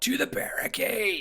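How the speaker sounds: high-pitched goblin battle shout. Voicing one of the Norkers calling out in Goblin: yelling. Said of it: "you hear one yell out".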